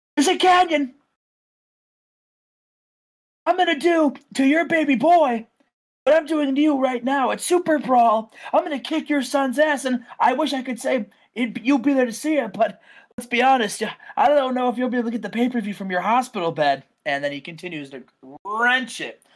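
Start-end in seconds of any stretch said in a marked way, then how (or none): 0.1-16.8 high, laughing, gloating trash-talk tone. Retelling Chris Jericho taunting a man while wrenching his hold, acting out taunting. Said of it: "laughing and shit talking him".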